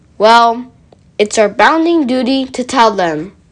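ordinary talk

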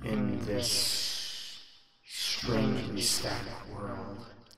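strange inhuman voice, otherworldly, echoing from a great distance. A voice from out of a well addresses those summoned: strange, not-human voice. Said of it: "But out of the well, seemingly from a great distance, echoes a voice. It's a strange voice, certainly not a human voice. It sounds, well, sounds is the wrong word. You don't really hear it with your ears, but you ... It's a strange voice, certainly not a human voice. It sounds, well, sounds is the w".

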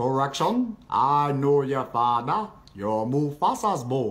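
dropped, very low, deep character voice. Trading voice impressions with others, the speaker lands one: close voice impression. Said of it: "pretty close".

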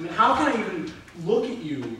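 sarcastic, dropped very low and quiet. Jealous of the newly named King Chuck, answering him: sarcastic. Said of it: "I'm being sarcastic because I wish I'd thought of it first".

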